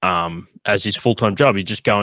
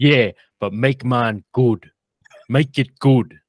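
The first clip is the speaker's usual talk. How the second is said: put-on Brooklyn accent laid on heavy; 4 semitones higher, 3 dB louder than usual. Retelling Tony leaning over a kebab counter, imitating Tony's Brooklyn accent. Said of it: "he's got that like thick Brooklyn accent".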